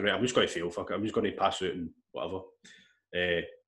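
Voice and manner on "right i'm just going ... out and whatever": ordinary delivery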